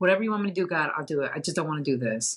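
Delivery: dead-serious, earnest, pleading tone. Speaker retelling what they told God back then: retelling a dead-serious plea. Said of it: "so dead on serious about it".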